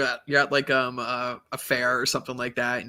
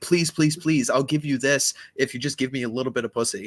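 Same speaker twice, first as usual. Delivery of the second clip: groveling, pleading, begging tone; 3 dB louder than usual. Mocking a guy who begs his girlfriend for favours: imitating a guy begging. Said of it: "like a guy begging on his hands and knees".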